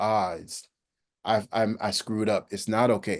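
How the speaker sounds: plain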